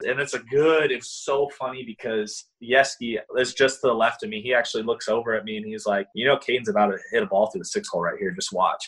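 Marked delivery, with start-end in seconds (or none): 6.1-8.9 put-on matter-of-fact, dead serious, utterly certain deadpan. Retelling a coach's calm prediction during a game: imitating someone dead serious. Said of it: "dead serious".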